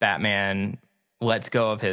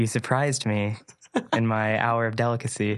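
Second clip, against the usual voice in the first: put-on seductive voice and tone. Retelling a scene where a woman in a robe turns: imitating a seductive voice. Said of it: "turns into this, like, seductive".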